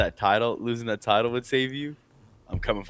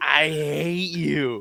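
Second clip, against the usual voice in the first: put-on drunk voice, much higher pitch; 4 semitones higher than usual. Retelling how a handcuffed drunk man yelled at the cops, imitating drunk John. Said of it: "so drunk".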